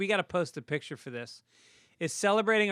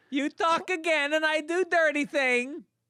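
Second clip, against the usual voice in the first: put-on Eastern European accent, higher; 10 semitones higher, 3 dB louder than usual. Showing how the character would really say it, Borat voice. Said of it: "Is it Borat?".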